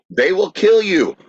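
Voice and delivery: acted screaming. Retelling how onlookers warned tourists near fighting bison: imitating people screaming. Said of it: "everyone else screamed".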